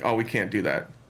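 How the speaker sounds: normal talking voice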